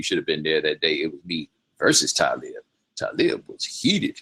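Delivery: ordinary delivery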